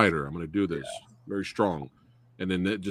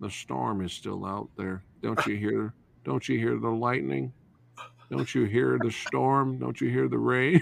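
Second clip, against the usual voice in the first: rough, creaky, raspy, insistent, pressing voice; 4 semitones higher than usual. Retelling a movie scene, imitating Michael Shannon's character insisting on the storm. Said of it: "don't be laughing at my Michael Shannon".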